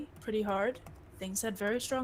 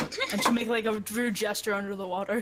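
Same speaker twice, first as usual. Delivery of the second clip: usual speaking voice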